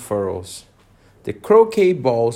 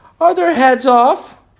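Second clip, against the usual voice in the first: shrill, very high, loud regal yell; 12 semitones higher, 7 dB louder than usual. The queen calling out to her soldiers: shouted. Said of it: "shouted the queen".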